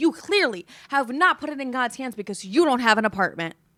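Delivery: loud, acted-out yelling and screaming. Retelling how a woman screamed back at the speaker outside, retelling her screamed reply. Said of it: "screaming at me back".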